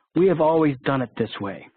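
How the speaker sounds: mock-sarcastic tone. The speaker mocks a common excuse against change; quoting in a sarcastic tone. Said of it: "he says in a sarcastic tone".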